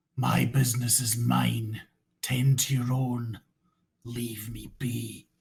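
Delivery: rough, harsh, gruff, gravelly voice. Narrator voicing a stranger answering the party, rough gravelly voice. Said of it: "a very rough, gravelly voice".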